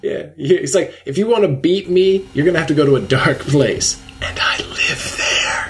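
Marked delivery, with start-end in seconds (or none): 1.1-5.7 relishing, gleeful, savoring every word. Retelling a wrestler's promo line, imitating Eddie's relishing delivery. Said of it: "said it with such revelry".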